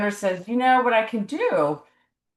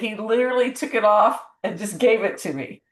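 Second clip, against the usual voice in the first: ordinary delivery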